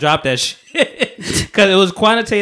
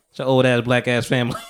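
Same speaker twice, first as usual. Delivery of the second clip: ordinary talk, nothing marked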